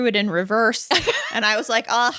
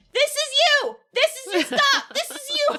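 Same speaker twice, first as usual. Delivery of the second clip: put-on, very high, far-carrying yell. Retelling calling to a rider from far away in the train: retelling own shout from afar. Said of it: "I was pretty far away, so then I had to go".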